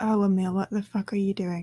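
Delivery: very quiet, hushed, under-the-breath aside. Voicing a character speaking aloud, not in a message: very quietly. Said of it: "Rose just very quietly says".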